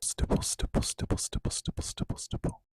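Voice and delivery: hushed whispering. Roleplaying an ear test, whispering a word into the listener's ear to repeat. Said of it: "I'm just going to whisper something into your ear".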